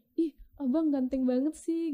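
high, slow, flirty, teasing catcall.

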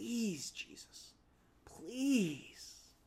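mock begging tone full of desperation. Acting out an official finding Jesus: imitating desperate begging. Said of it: "begging and pleading with desperation".

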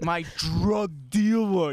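mock deep, low masculine voice. Repeating the other speaker's words, imitating a deep masculine voice. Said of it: "Your voice dropped down octaves".

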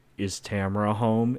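put-on whisper. Retelling what a friend does at sound check: imitating a whisper. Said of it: "he whispers".

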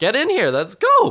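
shrill, high-pitched, challenging yell. Retelling how a man hit by a ball was ready to fight, imitating someone yelling. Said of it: "He just kept yelling".

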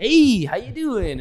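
happy, dancy, high-pitched and loud. Mocking a pretended happy front: happy, dancy Ellen DeGeneres impression. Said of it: "a happy, dancy".

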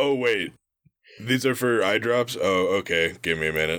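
excitement sinking into a deflated, crestfallen letdown. Retelling a game character learning the frogs are for eye drops: imitating a deflated character. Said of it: "his whole mood just drops".

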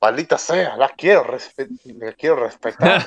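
put-on gruff anime villain voice. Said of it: "o la voz de Piccolo diciendo".

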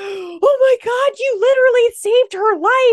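mock very high, very loud freaked-out outburst. Retelling how a girl's friends reacted after he grabbed the web, retelling friends freaking out. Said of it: "all of her friends sitting with her freak out".

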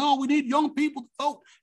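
bad put-on voice, pitched very high. Mocking politicians who call for young voters: Barack Obama impression. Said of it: "I don't do a very good Obama impression".

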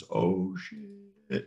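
very slow, slow-motion delivery with stretched-out words. Player voices Lynn turning toward Bryn, saying it in slow motion. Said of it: "in slow-mo".

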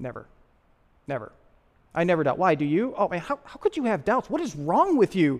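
pretend stern seriousness. Acting out a joking reply to someone who asks about doubt: mock serious answer. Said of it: "look really serious".

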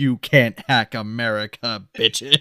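put-on passionate speechmaking. Retelling a movie hero's speech: imitating an impassioned speech. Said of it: "Goes into this impassioned speech".

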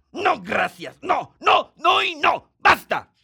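loud, high-pitched shouting. In a drama scene, a character shouting until told the neighbors can hear. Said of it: "No grites así".

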